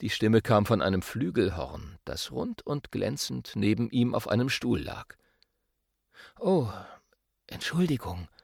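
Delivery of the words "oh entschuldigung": soft, breathy, breathed-out words. A saxophone, told that others are still sleeping, apologizes: breathed. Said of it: "hauchte das Saxophon".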